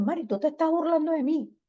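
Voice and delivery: high, hurt, accusing voice.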